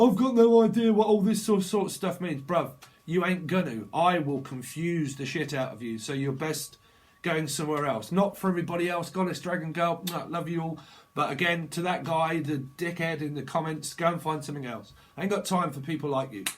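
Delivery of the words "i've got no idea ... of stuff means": high, loud, scornful mocking voice. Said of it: "To the dickhead that said".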